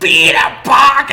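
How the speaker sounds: loud, writhing, dying villain voice, belted out. Describing a comic cover where he is dying, doing Doctor Octopus voice. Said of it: "that's how I always read it".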